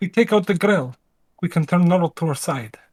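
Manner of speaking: quiet, hushed voice. A player voices a character speaking so a girl won't hear, hushed tone. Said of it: "in a hushed tone".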